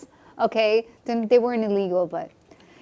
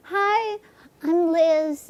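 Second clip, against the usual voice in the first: put-on sweet voice, higher; 7 semitones higher, 4 dB quieter than usual. Imitating how a guest greets people: imitating Liz's sweet voice. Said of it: "a sweet sound to her voice".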